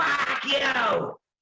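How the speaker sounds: put-on drunk Boston accent. Explaining how people in boston say it, doing the drunk irish guy voice. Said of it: "In Boston, the drunk Irish guy will go".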